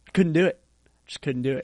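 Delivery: ordinary talk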